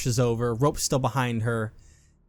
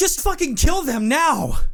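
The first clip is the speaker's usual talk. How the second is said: very high, shrill, enraged and furious scream; 5 dB louder than usual. A narrator voices a man whose hand was cut off ordering the goons, screaming. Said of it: "He's screaming".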